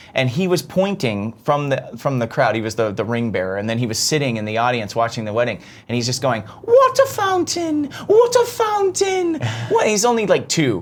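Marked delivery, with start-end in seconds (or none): 6.6-9.4 put-on, very high and slow British toddler voice. Quoting a two-year-old ring bearer at a wedding, imitating a toddler's british accent. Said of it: "water and fountain in a British accent".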